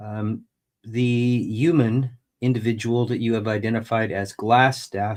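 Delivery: ordinary delivery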